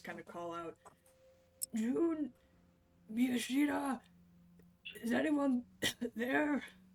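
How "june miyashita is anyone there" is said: hoarse, croaky voice, higher, louder, slower. Player character getting up shakily after an ordeal, calling for the others: croaky voice. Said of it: "in a croaky voice".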